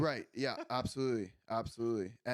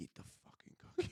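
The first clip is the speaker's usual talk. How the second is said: mock muttered whisper under breath, faster. Retelling what a girl whispered to them over dessert, whispering under breath. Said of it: "whispering under her breath".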